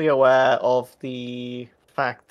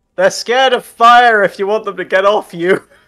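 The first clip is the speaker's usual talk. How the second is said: very loud, high yell; 8 semitones higher, 9 dB louder than usual. Calling back to a surrounded companion: yelling back. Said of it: "I'm gonna yell back".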